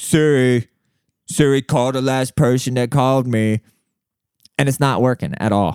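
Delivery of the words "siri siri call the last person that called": acted yelling. Retelling trying to call through a found phone: imitating own yelling at a phone. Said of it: "I'm like an old person just yelling in the street".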